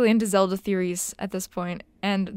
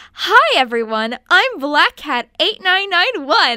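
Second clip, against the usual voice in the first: put-on very loud, high-pitched twelve-year-old kid voice; 7 semitones higher, 8 dB louder than usual. Reading an old author's note aloud: imitating my twelve-year-old self. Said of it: "I'm trying to do an impression of my twelve-year-old self".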